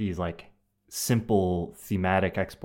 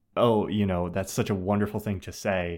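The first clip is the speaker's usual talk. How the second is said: normal talking voice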